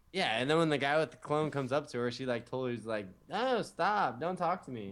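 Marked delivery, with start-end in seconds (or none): 3.3-5.0 very slow, dragged-out, drawn-out dismissive brush-off. Acting out how a girl rejects a guy wearing cologne: imitating a girl rejecting a guy. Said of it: "that voice".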